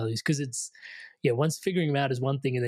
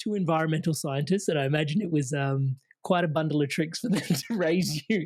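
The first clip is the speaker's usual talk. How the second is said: giggling and laughing through the words while talking; 3 semitones higher than usual. Asking a guest about her environmental scientist parents, laughing while talking. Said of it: "I'd stop laughing".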